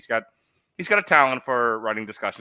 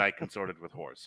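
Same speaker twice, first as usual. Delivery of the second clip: ordinary delivery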